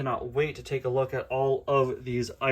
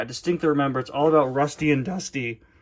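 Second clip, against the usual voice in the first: cracking voice; 3 dB louder than usual. Speaker talking to viewers after two hours of filming, with a voice crack. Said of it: "total voice crack there".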